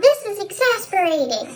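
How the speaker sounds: very high, squeaky cartoon mouse voice.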